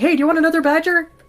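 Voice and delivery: very loud, high, shrill hollered yell. Yelling back at a person in the game while in character: yelling back in character. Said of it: "I'm gonna yell back at this person".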